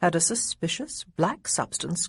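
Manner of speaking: ordinary delivery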